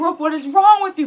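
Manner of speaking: high, loud, heartfelt scream. Retelling how a man in therapy yelled at her: imitating someone screaming. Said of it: "He was screaming at me".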